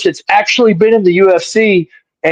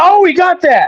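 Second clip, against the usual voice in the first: put-on shout, higher pitch; 11 semitones higher than usual. Retelling yelling from the crowd during a fight: imitating own past yell. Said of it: "I was yelling".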